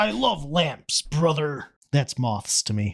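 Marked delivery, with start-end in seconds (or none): 0.0-1.6 pirate pro-wrestler put-on voice. Imagining how moths talk, the speaker voices a moth, Hulk Hogan-esque. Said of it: "the voice that I hear moths speaking is vaguely Hulk Hogan-esque".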